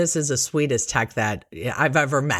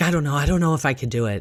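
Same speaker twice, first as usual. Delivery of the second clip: imitated panicked speech. Retelling what she said before a ct scan: imitating panicked speech. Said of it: "she starts panicking again".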